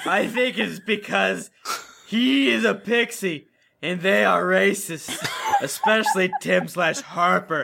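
low, slow, drawn-out, seductive sexy voice. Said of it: "you read it in a sexy voice".

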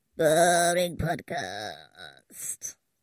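low, swooping, demonic goat bleat. Mocking a boring podcast, the speaker uses a goat-sounding demon voice. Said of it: "I sounded like a goat then, right? Demon?".

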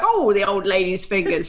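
cheery, jolly, sinister killer character voice. Imitating how he says a phrase, like a jolly serial killer. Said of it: "Like a jolly serial killer".

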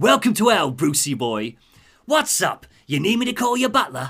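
put-on Cockney accent, pitched high. Podcaster retelling a comic character taunting Bruce, in a Cockney sort of accent. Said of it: "He's got like a Cockney sort of accent".

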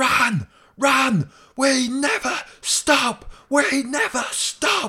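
very loud, very high drawn-out bellowing shout. Describing a training drill, the speaker retells Ange shouting from the sideline. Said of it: "I think he's shouting like".

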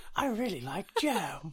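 high-pitched cartoon bear voice. Joking about Rob taking jam by hand: Winnie the Pooh voice. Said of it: "that was a really good impression of Winnie the Pooh".

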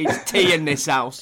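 play-acted, loud, slow, almost aggressive. Retelling a father's reply to a dinner offer: imitating almost aggressive father. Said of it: "Almost aggressive".

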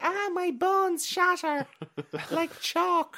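put-on small child's voice, high and slow. Reading a script aloud, voicing a seven-year-old boy character in a little boy voice. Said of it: "Why is he saying like Bosco?".

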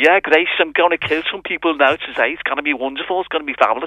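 imitated Scouse accent. Describing an odd warthog character, quoting its lines in Grugok's Scouse accent. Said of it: "voices it in a kind of a Scouse accent".

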